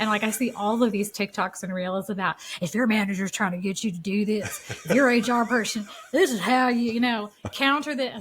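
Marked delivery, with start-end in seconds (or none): 2.6-8.2 put-on Southern accent. Quoting advice from TikToks and reels: imitating a Southern accent. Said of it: "sorry for the Southern accent".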